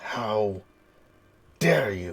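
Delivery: forced out through clenched, gritted teeth. Theo turns on the figure that spoke in his wife's voice, through gritted teeth. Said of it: "through gritted teeth simply says".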